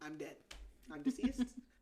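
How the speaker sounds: ordinary talk, nothing marked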